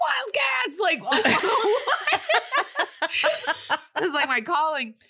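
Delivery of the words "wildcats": very high, shouted cheer. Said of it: "And I was like".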